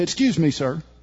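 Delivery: normal talking voice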